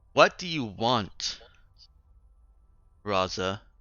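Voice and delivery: irritated, grating voice heard over speakers. Voicing a ship's computer over the bridge speakers: annoyed grating female voice. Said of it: "very annoyed, grating female voice".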